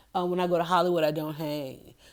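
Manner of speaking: soft, quiet, easy swagger with final consonants dropped. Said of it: "that soft, quiet swag".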